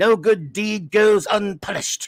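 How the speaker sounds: attempted snarl. Quoting a saying in imitation of Avon: Avon snarl. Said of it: "I was doing my best Avon snarl".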